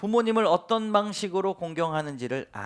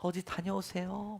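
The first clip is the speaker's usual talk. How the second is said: sweet, coquettish, sugary coaxing lilt; 10 dB quieter than usual. Imitating someone greeting people at the market: sweet, coquettish voice. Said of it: "간드러진 목소리로 어디 다녀오세요 이렇게".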